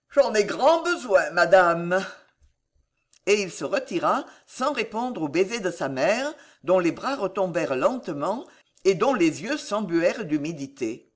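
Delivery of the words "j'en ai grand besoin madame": yawning, slower. The future Henri III answers his mother, yawning. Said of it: "dit le futur Henri III en bâillant".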